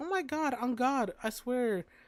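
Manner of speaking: put-on high, grating, nonstop chattering girl voice. Retelling how an annoying short girl sounded: imitating an annoying girl. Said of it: "this is how she sounded".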